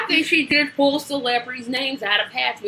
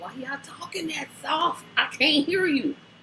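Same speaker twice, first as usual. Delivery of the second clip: put-on, mildly brash, blunt, loud griping voice; 3 semitones higher, 3 dB quieter than usual. Retelling how their group reacts to soft talkers: imitating a loud voice. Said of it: "Yep, loud".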